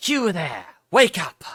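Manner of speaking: hissing, lizard-like creature voice. Voicing a game character guessed to be lizard folk: hissy lizard-folk voice. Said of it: "try to do, like, a hissy voice".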